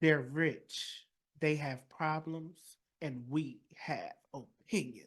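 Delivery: very slow, deliberate, weighty delivery. Redoing the show intro a second time: Olivia Pope voice. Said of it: "that was my Olivia Pope voice".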